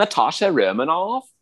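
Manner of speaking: put-on thick California accent. Telling Banner her name in the Avengers, Natasha Romanoff with a really thick California accent. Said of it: "she sounds like she's a character from Clueless".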